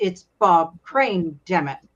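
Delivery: quiet muttering under the breath. Retelling a typecast actor's reply when people call him by his character's name: imitating muttering under his breath. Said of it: "he would say under his breath".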